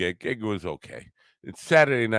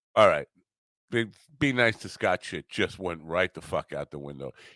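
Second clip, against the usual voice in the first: plain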